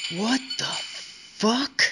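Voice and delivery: hushed whisper under the breath. Lee sees a chain running to a little boy's leg, whispered to himself. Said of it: "Lee whispered to himself".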